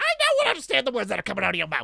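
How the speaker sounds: put-on high excited voice. Quoting a movie line: Chris Tucker voice. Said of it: "Chris Tucker right there".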